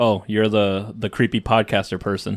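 ordinary talk, nothing marked

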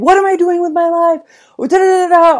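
very high-pitched screamed outburst. Recounting throwing pants out the window, retelling own past scream. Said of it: "and I was screaming".

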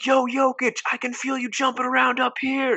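put-on, very high-pitched, jeering shout. Recalling a fan heckling Jokic at a Nuggets game: imitating a fan yelling. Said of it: "he just yells".

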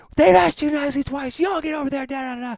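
put-on female yelling. Retelling a mom storming out after a rock splashed Dylan, imitating her yelling. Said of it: "she's like yelling at him".

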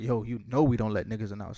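ordinary talk, nothing marked

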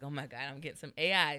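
acted excited tone. Retelling waiting for shoes in the mail: imitating own excitement. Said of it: "So I was excited".

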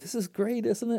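very high, giggling, giggly exclamation. Speaker retelling what a lady with two kids said to him, imitating her giggle. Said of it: "she just looked at me and just giggled".

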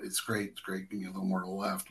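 very quiet, soft half-whispered delivery. Retelling directions given while working a difficult shot: retelling a half-whisper. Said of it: "I'm whispering".

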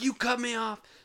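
very high, shrill, screeching scream. Telling of a woman who jumped out of her car, imitating her screaming. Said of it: "they start screaming at this person".

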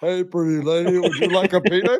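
put-on big, hulking giant's voice. Quoting a giant's movie line in an Andre the Giant voice. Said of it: "sound like Andre the Giant".

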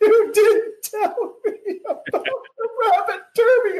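acted, very high, slow, weepy tearful lament. Retelling what she said while crying: imitating someone crying. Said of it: "she's crying. She's like".

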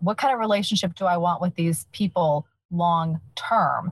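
plain

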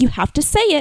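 mild, high-pitched yell. Retelling a tennis game where she had to call the points, retelling someone yelling. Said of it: "she's yelling at me".

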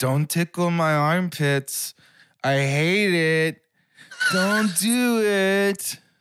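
put-on very high-pitched, very slow small child voice. Retelling a five-year-old nephew walking up with arms raised: imitating a five-year-old nephew. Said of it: "my five-year-old nephew walking up to me with his arms up".

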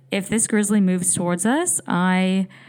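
ordinary talk, nothing marked

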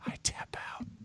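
whispered, drawn out, slow and very soft. Retelling how a fighter tapped out: imitating someone whispering. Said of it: "It's just him whispering".

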